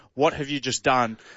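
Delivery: normal talking voice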